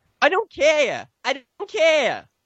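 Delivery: poor put-on New England accent. Retelling what a woman said, in a horrible New England accent. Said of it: "That horrible New England accent".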